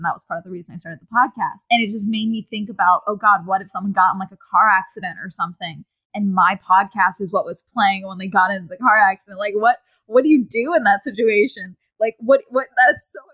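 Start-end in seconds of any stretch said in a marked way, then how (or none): none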